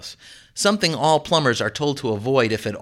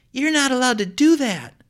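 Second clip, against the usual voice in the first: appalled, horrified cry, pitched very high; 12 semitones higher than usual. Kia runs into the kitchen from the living room, horrified. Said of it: "looking horrified".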